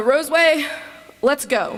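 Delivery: put-on loud, high, called-out voice. Storyteller quoting a man after he looks back at the crowd, retelling his loud voice. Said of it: "says in his loud voice".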